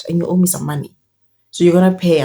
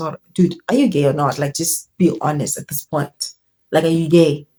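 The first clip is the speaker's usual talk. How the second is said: ordinary talk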